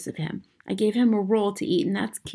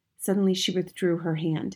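plain

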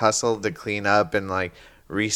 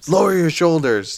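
mock drill sergeant voice, higher and louder; 8 semitones higher, 5 dB louder than usual. Imitating another speaker's instructions to a kid: imitating a drill sergeant. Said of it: "it's like a drill sergeant".

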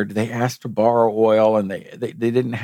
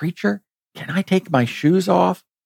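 put-on whisper under breath, higher; 8 semitones higher than usual. Retelling a bride's question right before her vows: imitating a whisper under her breath. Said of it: "under her breath".

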